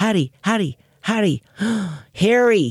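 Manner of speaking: put-on American accent, pitched high. Retelling calling a little dog that only answered to an american accent. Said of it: "I had to say his voice in an American accent".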